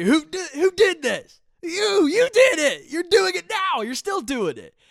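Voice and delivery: very loud, very high, shrill, swooping yell. Retelling how a woman whipped around accusing the speaker: imitating her yelling. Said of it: "starts yelling at me".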